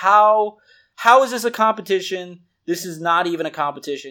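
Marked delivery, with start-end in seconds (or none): none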